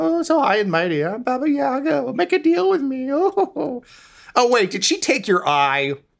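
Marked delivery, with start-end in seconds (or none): 0.0-3.1 thickly mocking put-on character voice. Voicing a character who mocks Baba Yaga for acting high and mighty: mocking Baba Yaga imitation. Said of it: "Not like Yaga".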